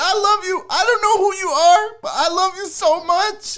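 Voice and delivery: weeping, overcome, tearful, very high crying voice. Speaker on the Barry on Deck show at his shining moment, crying while talking. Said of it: "I'm crying".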